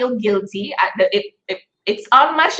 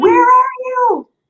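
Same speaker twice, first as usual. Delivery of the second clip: put-on impatient shout, very high pitched and loud; 13 semitones higher, 4 dB louder than usual. A mother retelling calling for her six-year-old son: retelling a shout. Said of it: "and I shouted".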